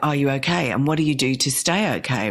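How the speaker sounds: ordinary talk, nothing marked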